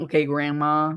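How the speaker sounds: normal talking voice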